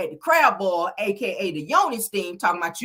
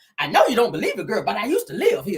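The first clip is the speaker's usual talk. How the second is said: dramatic Southern matron character voice. Retelling what Tisha said: Sofia from The Color Purple voice. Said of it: "she was sounding like uh uh uh Miss Sophia or Color Purple".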